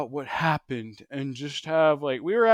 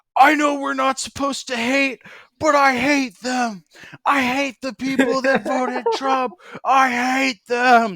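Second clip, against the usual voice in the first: put-on, very high, loud, hysterical crying and screaming; 10 semitones higher, 7 dB louder than usual. Retelling a classmate's outburst in class, imitating hysterical crying. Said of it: "And he's crying, like hysterically, like crying and screaming".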